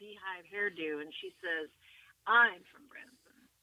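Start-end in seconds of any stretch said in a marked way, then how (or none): 2.3-3.4 play-acted haughty, stuck-up, arrogant, raised voice. Retelling a woman's reply to a question: imitating an arrogant tone. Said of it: "in kind of an arrogant way".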